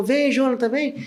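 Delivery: urgent yell, pitched high. Recounting a shooting, quoting the friend who opened the barbershop door, retelling an urgent yell. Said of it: "ele me gritou".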